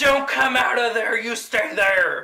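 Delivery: high-pitched, play-acted screaming. Retelling how a man being helped on the toilet screamed, imitating someone screaming. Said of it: "screaming at his poop to not come out".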